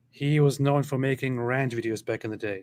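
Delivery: plain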